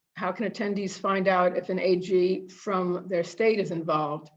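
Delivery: ordinary talk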